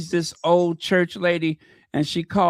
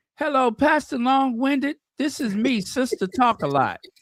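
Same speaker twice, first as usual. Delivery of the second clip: put-on high little elderly woman voice; 7 semitones higher than usual. Retelling an Instagram creator's church skit, Sister Talk a Lot old-lady voice. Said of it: "she does a little character of an old lady".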